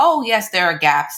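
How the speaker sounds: casual, flippant, offhand, brushing-it-aside tone. Showing how not to talk about gaps affecting patients: flippant, offhand tone. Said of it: "we can't just say it in a very flippant way".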